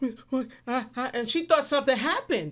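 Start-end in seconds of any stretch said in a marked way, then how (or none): 0.0-1.1 mock crying with put-on sniffling. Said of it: "called her crying, like, sniffling".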